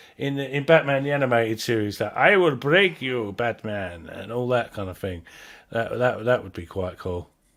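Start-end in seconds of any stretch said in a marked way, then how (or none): 2.0-4.1 put-on Spanish accent, much slower. Wishing he had done the role this way, quoting the cartoon line in a sort of spanish accent. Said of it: "a sort of Spanish accent".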